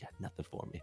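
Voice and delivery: imitated menacing tone, quiet. Recounting a scene partner's line in character, imitating Ryder's quiet scary voice. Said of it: "that's the scariest thing you've ever said".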